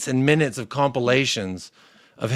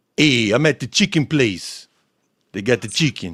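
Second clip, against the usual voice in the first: put-on New York accent. Friends imitating a food-content creator's live stream: Omar impression, New York accent. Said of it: "Jacob was requesting a New York accent".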